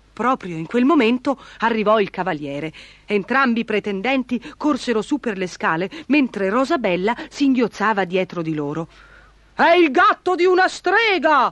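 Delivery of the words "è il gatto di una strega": shouting it out, high yell. The baron runs up the stairs after the knight arrives, yelling. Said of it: "urlò il barone".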